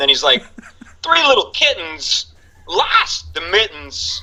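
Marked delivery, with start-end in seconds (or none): 1.0-4.2 halting, pitched-up storybook reading with strange stresses. Retelling a comedian's impression reading children's stories: Christopher Walken impression. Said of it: "his Christopher Walken one".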